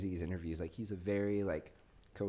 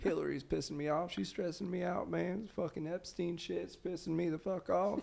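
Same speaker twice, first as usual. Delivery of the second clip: put-on southern politician voice, higher; 10 semitones higher than usual. Doing an impersonation on a podcast: Bill Clinton impression. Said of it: "My Bill Clinton impersonation".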